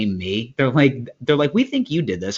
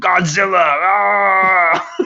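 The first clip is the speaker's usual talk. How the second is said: wild, loud, high scream with drawn-out ah; 8 semitones higher, 5 dB louder than usual. Reminding a friend what he did last night, the speaker imitates his scream: retelling a scream. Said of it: "you started screaming".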